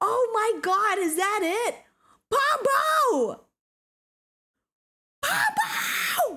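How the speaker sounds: high, swooping excited scream of joy. Speaker screaming a name over and over: screaming excitedly. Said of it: "Sorry for screaming your bloody head off".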